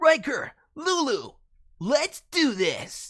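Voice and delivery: very high, loud, shrill anime shonen hero cry. Introducing the character Alex Hedgefox, heroic shonen anime teen voice. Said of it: "Heroic shonen anime teen voice? Let's go with this".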